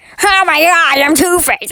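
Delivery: goofy cartoon villain voice. Talking through a movie, the speaker does its Two-Face: Two-Face impression. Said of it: "I'm about to do a impression of the Two Face in this movie".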